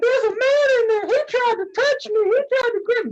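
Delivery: mock shrill, very high scream. Retelling what a guy screamed about the bathroom, imitating someone screaming. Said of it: "He's fucking screaming".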